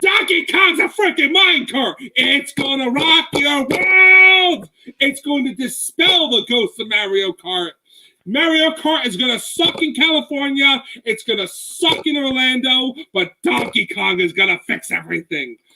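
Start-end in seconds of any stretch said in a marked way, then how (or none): 0.0-13.9 high, passionate, fired-up yelling with "world" stretched out. Speaking with the passion they feel about the ride, the speaker is yelling. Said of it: "Yes, I know I'm yelling".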